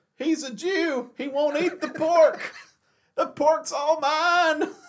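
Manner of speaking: play-acted, very high, thrilled, excited yell. Retelling Tom's reaction to a breakfast of ham and bacon, retelling an excited yell. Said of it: "He yells".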